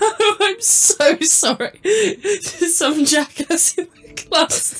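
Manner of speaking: cracking up, very slow and high through laughter. Reading out a text message on stream, laughing while reading. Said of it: "you're laughing while reading that line".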